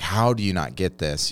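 usual speaking voice

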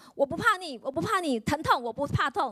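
loud, half-voiced, resolute battle-cry shout. Speaker reenacts what they shouted whenever pain came, retelling a loud shout. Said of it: "我就大喊说".

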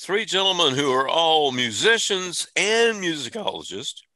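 voice breaking and cracking mid-phrase. Radio host introducing three musician guests on the Kudzu Radio Hour: voice cracking. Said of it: "my voice cracked when I said that".

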